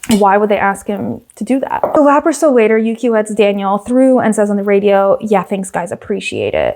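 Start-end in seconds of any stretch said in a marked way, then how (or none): 5.2-6.8 acted, swooping, very sarcastic delivery dripping with sarcasm. Retelling a driver's radio message after letting another driver through, quote it mock-sarcastically. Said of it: "Very sarcastically".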